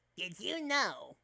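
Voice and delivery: robotic battle droid voice.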